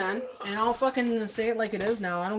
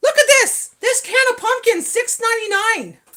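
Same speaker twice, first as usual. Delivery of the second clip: piercing, shrill, very loud complaining tone; 12 dB louder than usual. Retelling complaining about a price in a store: retelling a loud complaint. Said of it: "And I said it loud".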